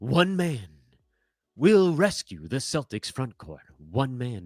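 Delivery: epic movie trailer announcer voiceover voice. Talking about the Celtics front court, announcing in the movie trailer guy voice. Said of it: "I need the movie guy voice".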